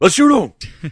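high, loud yell. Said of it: "He's always yelling".

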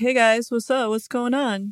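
unhurried, no-urgency drawl. Mimicking someone who moseys in with no urgency: mimicking a slow, unhurried arrival. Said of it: "moseys in all slow".

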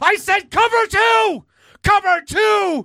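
very high, shrill, very loud scream. Retelling a coach screaming at kids on the field: imitating Jay screaming at kids. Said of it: "Jay screaming with a sleeveless sweater at kids".

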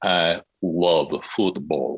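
very slow, low, sultry, throaty sexy voice. Showing someone how to say a line, very slow, sexy delivery. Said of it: "say it very slowly".

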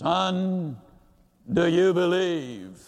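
low, deep, resonant voice with son drawn out. Telling a joke, the speaker voices the answer to a man shouting for help, deep voice. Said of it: "Then there was a deep voice".

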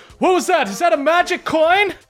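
startled, surprised voice. Voicing a guard startled by a flash of light: startled guard. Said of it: "you hear the guard startled".

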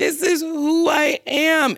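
put-on high-pitched crying, words dragged out very slowly. Retelling what she said on the show: imitating someone crying. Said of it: "crying, being like".

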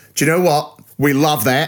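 put-on Australian accent with twang. Acting out someone's reaction to a film pitch: Australian accent. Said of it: "Why am I Australian?".

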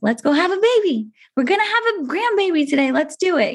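put-on cheerful, hopeful tone. Retelling the father-in-law's words on the way to the hospital: imitating an optimistic father-in-law. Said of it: "so optimistic".

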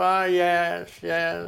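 put-on nasal comedian drawl. Running through a series of impressions: W. C. Fields voice. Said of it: "W C Fields".

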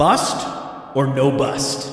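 deep, drawn-out voice. Announcing the name of a game: deeper voice, emphasized. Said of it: "I sort of went deeper with my voice there".

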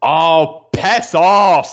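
put-on loud, high, full-voice yell. Retelling a reaction to a wrestler winning the briefcase: retelling a yell at full volume. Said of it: "I literally said that at the top of my voice".

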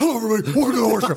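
very high-pitched voice, pushed way up. Opening a horror podcast intro as another host: Robert Frank impression. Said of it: "Your Robert Frank impression is so good".

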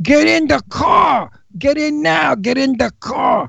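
mock yelling in Brooklyn accent. Recalling playing a cop arresting a girl who won't get in, retelling a Brooklyn-accent yell. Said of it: "with a Brooklyn accent".

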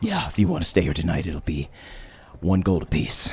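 grunt-laden, sturdy woman innkeeper character voice. Narrator voices a woman character speaking to the listeners, grunting character voice. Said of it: "She's like very strong and sturdy, kind of looks at you and grunts, and she kind of says".

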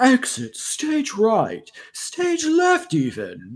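very drawn-out, slow, swooping foppish cartoon cat voice. Describing a cartoon cat to another speaker: Snagglepuss voice. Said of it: "my Snagglepuss impersonation".

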